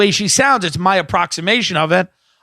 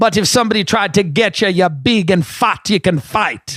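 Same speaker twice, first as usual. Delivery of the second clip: put-on West Indian, Caribbean-accented voice. Speaker retells what a woman said to them, in a West Indian accent. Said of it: "West Indian".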